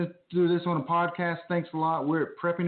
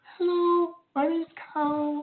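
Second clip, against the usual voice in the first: mock sexy voice, slightly higher pitch; 11 semitones higher than usual. Imitating Kyle recording a commercial: imitating Kyle's sexy voice. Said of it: "with my sexy voice".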